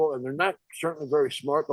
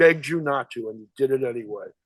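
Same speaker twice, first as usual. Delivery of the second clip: serious, earnest tone, lower pitch; 3 semitones lower than usual. Retelling Gene Siskel's reaction after Roger Ebert spoiled the ending: imitating Gene Siskel, dead serious. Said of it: "Gene Siskel is so, so serious".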